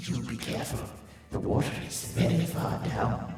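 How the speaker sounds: monstrous, cavernous, deep echoing beast voice. Answering a player who just said careful now, in a bestial, deeper, echoing voice. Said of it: "in this bestial, deeper, sort of echoing voice".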